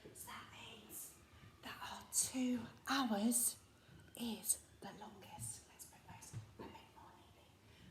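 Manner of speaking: soft hushed whisper. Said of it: "Whisper it quietly".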